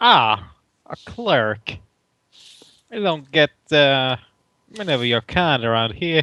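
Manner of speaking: put-on Brooklyn accent. Voicing an innkeeper who answers a cleric: Brooklyn accent. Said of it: "I appreciate accent".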